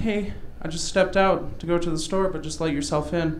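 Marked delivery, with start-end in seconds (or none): none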